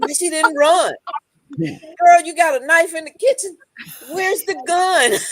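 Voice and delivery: screaming, high and loud. Speaker describes watching murder shows, retelling screaming at the tv. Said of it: "I'm screaming at the T V".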